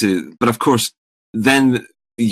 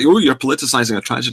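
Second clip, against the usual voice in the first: ordinary talk, nothing marked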